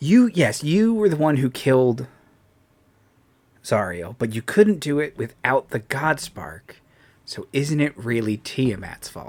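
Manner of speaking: put-on whisper in character voice. Voicing a character leaning over to speak privately to a player: whispering in character. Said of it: "put his hand over the microphone so he can whisper to you".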